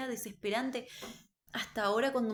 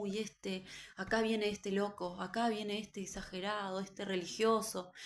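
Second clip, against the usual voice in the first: ordinary talk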